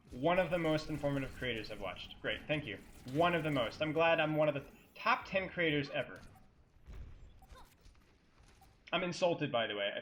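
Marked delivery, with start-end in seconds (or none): none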